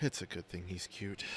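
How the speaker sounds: soft, hushed whispered aside. Voicing a character leaning over to another: whispering. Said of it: "and she whispers".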